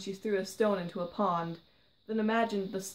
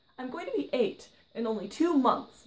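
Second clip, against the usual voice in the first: touchy, defensive, pitched-up voice; 5 semitones higher, 3 dB louder than usual. Seven-year-old [name] answers a man who just called her young, defensively. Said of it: "she said defensively".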